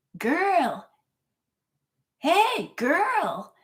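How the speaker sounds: put-on very high, belligerent, swooping drunk holler. Retelling how a drunk man called out in a parking lot: imitating a drunk man shouting. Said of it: "this belligerent drunk man just shouts at me".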